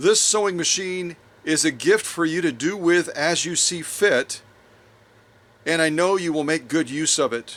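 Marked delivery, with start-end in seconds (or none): none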